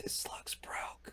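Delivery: whispered speech. Acting out leaning over to the scholar, whispering. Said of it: "just whispering".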